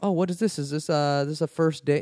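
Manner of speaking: rough, sloppy, bad stand-up comic voice. Retelling a comedian's bit to a couple on a date: worst Dane Cook impression. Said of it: "This is the worst Dane Cook impression".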